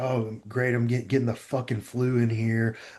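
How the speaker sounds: angry, cussing, swearing delivery. Retelling past complaints about a cold gym: imitating own angry cussing. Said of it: "I'd be cussing".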